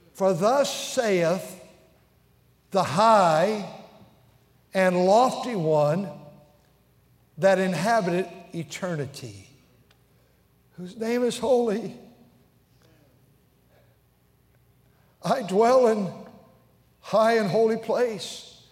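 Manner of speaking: slow, unhurried reading aloud. A speaker reads a scripture passage aloud for listeners, reading slowly. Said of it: "I'll read it slowly".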